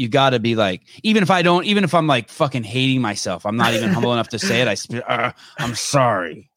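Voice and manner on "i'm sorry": grudging delivery through gritted teeth. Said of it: "Grit through the teeth".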